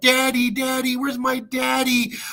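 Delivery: put-on high, pleading little kid's calling voice. Mocking a father who abandoned three young sons: imitating young sons calling for daddy. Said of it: "when they were like".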